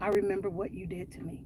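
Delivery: very low, very quiet, frightened, hushed voice. Retelling what they said on a phone call, acting out a low, scared voice. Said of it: "I said in a very, very low, scared voice".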